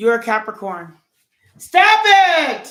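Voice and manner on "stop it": very high, shrill, very loud scolding yell. Breaking off from talking to viewers, yelling at a dog. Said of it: "I'm yelling at my dog right now".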